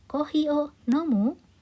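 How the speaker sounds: pitch lifts at the end of nomu. Lesson on asking without the question particle, rising intonation on nomu. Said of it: "jadi tinggal menaikkan intonasinya saja. Intonasinya menjadi tinggi".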